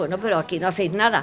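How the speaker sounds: ordinary delivery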